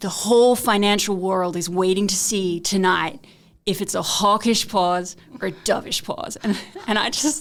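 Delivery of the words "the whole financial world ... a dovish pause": terrible, clumsy put-on American accent. Imitating a financial TV presenter on the Fed decision: terrible American accent. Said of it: "do a terrible accent".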